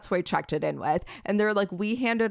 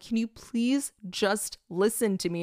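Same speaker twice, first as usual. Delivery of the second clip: play-acted tearful pleading through sobs; 3 semitones higher than usual. Retelling a sobbing plea to an airline desk agent: imitating own sobbing plea. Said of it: "fully sobbing, and I'm, like, begging".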